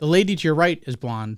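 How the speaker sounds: plain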